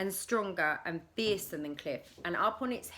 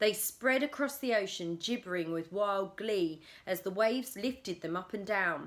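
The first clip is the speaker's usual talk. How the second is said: plain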